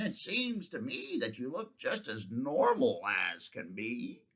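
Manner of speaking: croaky, croaking raven-like bird voice. Narrator reading the raven's reply to the hiding horse Pitter, croaking raven voice. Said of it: "croaked the raven".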